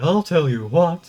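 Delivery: fake Texan cartoon father voice. Doing impressions after being asked: Hank Hill impression. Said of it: "I'm pretty proud of that impression".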